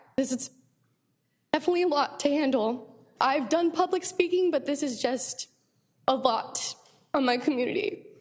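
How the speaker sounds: voice catching and choked up, close to tears. An Oceanside resident addressing the audience about her community, near tears. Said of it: "sorry if I cry".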